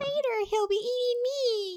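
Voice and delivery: very high, slow, drawn-out little voice. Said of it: "she had that really high-pitched voice".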